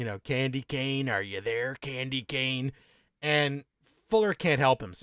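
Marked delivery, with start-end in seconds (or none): 0.2-2.7 soft, menacing, sinister, ominous call. Recapping the film, speaker voices Rusty Nail calling over the CB radio, ominous. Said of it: "comes that ominous, perfect voice".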